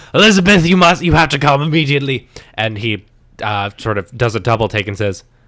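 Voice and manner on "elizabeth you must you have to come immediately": put-on pirate-sounding accent. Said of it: "You're starting to turn into a pirate".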